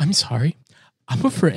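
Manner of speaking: play-acted voice on the verge of crying. Retelling a producer's apology, imitating someone near tears. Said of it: "like she's almost crying".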